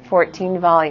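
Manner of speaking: normal talking voice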